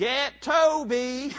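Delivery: put-on tiny, high child's voice, one word stretched out. Speaker acts out their small child self speaking behind Mom, in a tiny child's voice. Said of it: "she heard a little bitty voice behind her say".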